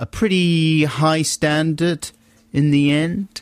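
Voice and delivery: high, slow, drawn-out sarcastic tone. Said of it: "Why are you saying it like that?".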